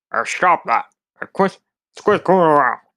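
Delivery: muffled cartoon voice, sounding like a mouthful of food. Explaining who was being imitated, the speaker repeats the South Park teacher impression. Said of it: "who I was imitating was that one teacher from South Park".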